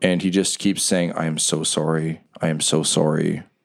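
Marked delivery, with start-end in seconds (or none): 1.1-3.4 tearful, weeping, low, slow delivery through sobs. After the stunned crowd falls silent, Riker runs over and hugs the player, weeping. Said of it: "and he's weeping".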